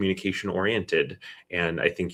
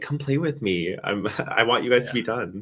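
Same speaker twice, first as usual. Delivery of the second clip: high, little, tired-sounding playful kitty voice; 5 semitones higher than usual. Voicing the pet cat, tired after almost three hours on show: voicing a tired cat. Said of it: "He's like".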